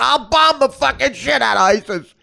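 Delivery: loud, slow, booming bar-room bluster. Contrasting politicians' campaign lines: Donald Trump as a drunk New Yorker. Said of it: "He's like a drunk New Yorker in a bar".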